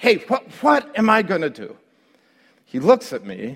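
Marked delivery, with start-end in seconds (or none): 0.0-1.8 mock exasperated outburst, high and swooping. Retelling a flight as the pilots announce South Bend: retelling losing it. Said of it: "so then I lost it".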